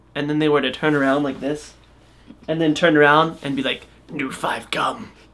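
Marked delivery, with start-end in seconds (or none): 4.1-5.1 soft, mechanical, robotic cyborg voice. Retelling someone offering their new gum, then turning around: cyborg voice. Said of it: "Like a cyborg".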